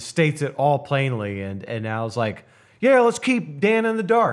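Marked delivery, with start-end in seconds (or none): 2.8-4.3 very high, loud, mocking sarcasm. Retelling a scene where Al answers about telling Dan, Al's sarcastic reply, mock-sarcastic. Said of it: "just like sarcastically".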